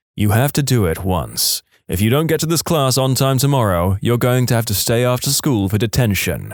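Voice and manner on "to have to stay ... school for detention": plain reading voice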